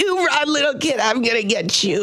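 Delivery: playful mock threatening tone. Retelling how others teased him and stole his cigarettes: playful mock threat. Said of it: "just very playful".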